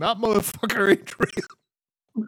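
high shout, very slow, every word stretched. Retelling a video of a woman thrown off a plane: imitating a woman shouting. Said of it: "she's shouting".

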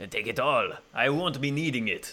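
heavy, thick French accent, smooth and warm. Asked to try the voice, speaking as Chabot LeBeau in a thick French accent. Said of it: "It's a very thick French accent".

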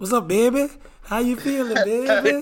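put-on New Orleans accent, soft and high. Greeting someone in a conversation about New Orleans, in a fake New Orleans accent. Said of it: "don't start this fake New Orleans accent".

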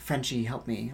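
faint, hushed, pleading whisper. Retelling a scene where a voice calls out for help: imitating a whisper. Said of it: "like a whisper".

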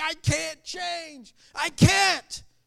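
mock loud, very slow sobbing words. Retelling a man's words as he walks away bawling: imitating a man crying.

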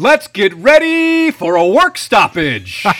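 loud, slow, high, drawn-out ring announcer hype voice. Wrapping up an edition of the show, Michael Buffer voice. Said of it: "in the voice of Michael Buffer".

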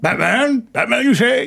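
comic voice pushed very high. Quoting a scene from Batman Forever: Jim Carrey impression. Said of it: "Like Jim Carrey's in, um, Batman Forever".

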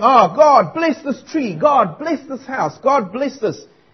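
scornful parody, high pitch, slow and drawn out. Retelling how a man mocked a praying man: imitating someone mocking. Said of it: "mocking this man".

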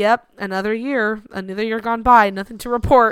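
plain

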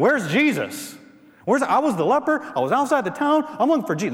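loud excited yell, high. Imagining a healed leper running into town: imitating someone yelling. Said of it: "he's yelling to everybody".

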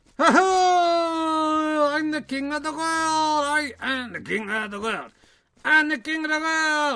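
very high, loud, slow puppet voice, stretched-out "I". Introducing a little friend to make Ali jealous: King of the World puppet voice. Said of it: "a little friend of mine".

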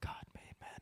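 mock-quiet delivery. Quoting a film character's reply after he shoots a man; retelling a very quiet line. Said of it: "he says very quietly".

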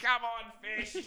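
very high, loud cheering shout. Retelling cheering at the game: imitating own yell at a game. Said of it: "at the game yelling out".

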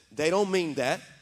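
ordinary delivery

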